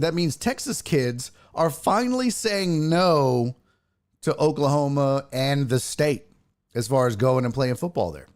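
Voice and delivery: plain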